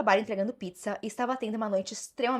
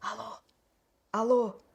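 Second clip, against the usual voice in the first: put-on strange, breathless, panting voice. Retelling a phone call, imitating a strange breathless voice. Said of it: "uma voz esquisita e ofegante atendeu".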